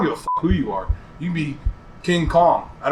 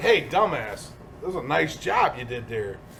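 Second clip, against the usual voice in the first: play-acted, dripping with sarcasm, backhanded tone; 6 dB quieter than usual. Showing how to make someone feel bad kindly: sarcastic mock praise.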